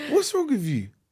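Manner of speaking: mocking, high, squeaky voice.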